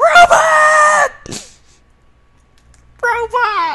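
high, loud, shrill frightened scream, drawn out. Startled by a robot while playing a game: screaming in fright. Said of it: "Sorry for that scream".

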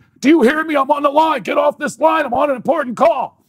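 very high, loud, shrill screeching scream. Recounting a man on the same phone line as the speaker; retelling a man screaming. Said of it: "this guy's screaming in my ear".

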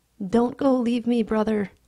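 high, loud, fearful, frightened cry. Narrator reads Doodle, frightened of being left, begging his brother: crying out, frightened. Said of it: "he cried".

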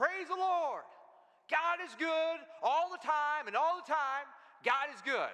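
high-pitched shout at full volume, top of lungs. Telling a story about a faithful lady on her porch; retelling a yell at full volume. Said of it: "yell out the top of her lungs".

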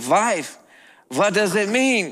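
put-on Eastern European accent. Telling a story about a husband and wife, quoting the husband in an Eastern European accent. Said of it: "in his Eastern European accent".

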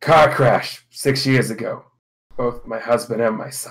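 grave, somber delivery in a low voice. A game master voices a mother answering the players' question, somber voice. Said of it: "gets a somber look in her voice".

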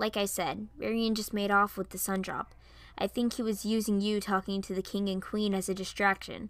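ordinary delivery

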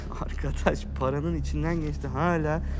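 very soft muttering under the breath.

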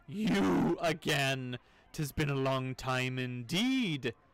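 loud, slow, terrible burbling monster voice. Narrating, the speaker voices the many-headed pillar thing speaking at once: terrible, burbling monster voice. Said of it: "to make the thing's voice a terrible, burbling sound".

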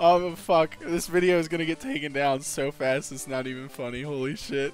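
laughing hard, cracking up. Reacting to what they just said on video, laughing hard. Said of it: "I'm laughing so hard".

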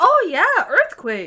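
very high-pitched, bright, happy, cheerful voice. Recognizing a place another speaker mentioned, sounding happy. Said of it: "I don't mean to sound so happy".

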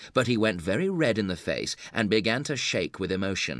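ordinary delivery

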